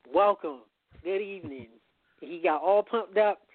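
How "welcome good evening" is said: normal talking voice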